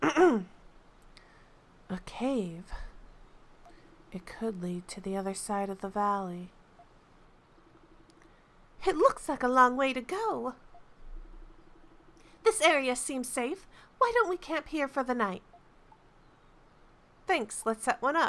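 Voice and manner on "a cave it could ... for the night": soft-spoken, gentle male voice. Player voicing game dialogue, doing Hummel in a soft guy voice. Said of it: "I guess I can try and do a soft guy voice?".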